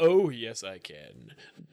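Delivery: very deep voice, every word drawn out. Answering a request for an impression: George Takei voice. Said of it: "can you do a George Takei impression for us?".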